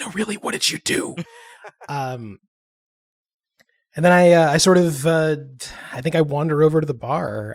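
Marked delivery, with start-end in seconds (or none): 0.0-1.2 hushed, soft whisper under the breath. A player's character whispers a question to Dosk, whispering. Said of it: "sort of whisper to Dosk".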